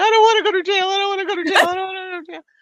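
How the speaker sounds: very high, very loud wailing, blubbering sob. Recalling a judge threatening to jail you for contempt: retelling own crying.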